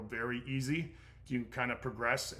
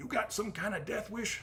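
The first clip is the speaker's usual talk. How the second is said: put-on Southern accent with a drawl; 10 semitones higher, 7 dB louder than usual. Retelling a roadside stop, acting out what the officer said to him, in a southern accent. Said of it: "I talk like he's got a southern accent".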